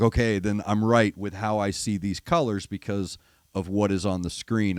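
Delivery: ordinary talk, nothing marked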